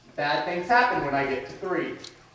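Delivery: ordinary delivery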